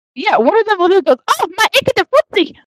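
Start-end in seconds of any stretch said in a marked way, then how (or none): 1.3-2.5 put-on Mexican accent, high-pitched. Retelling a story, the speaker quotes one of the goblins in a Mexican accent. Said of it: "they have, Mexican accents".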